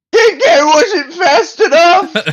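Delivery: put-on, shrill, loud, very high panicked yell. Yelling in character after a bad dice roll: yelling in character. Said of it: "I'm gonna yell".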